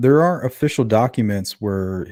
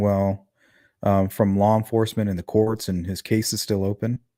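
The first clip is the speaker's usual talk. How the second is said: ordinary delivery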